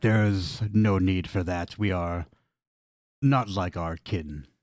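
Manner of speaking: slow, raspy reptile-creature voice. A game master voices a lizard folk beckoning the player to stand, raspy lizard folk voice. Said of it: "he's in a raspy voice".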